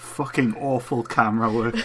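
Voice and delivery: ordinary delivery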